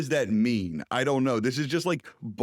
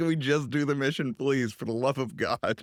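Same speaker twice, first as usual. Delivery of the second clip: ordinary talk, nothing marked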